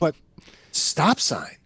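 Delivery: mock confused, baffled, disbelieving protest. Retelling a driver who honked at a rolling stop: imitating a baffled driver. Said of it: "like he couldn't understand it".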